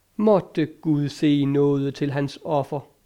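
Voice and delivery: plain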